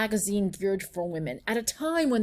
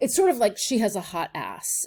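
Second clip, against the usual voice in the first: ordinary delivery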